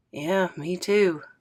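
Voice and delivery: muttered quietly under the breath. Reading a story aloud, a boy answering to himself: said under his breath. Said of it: "Scoob says under his breath".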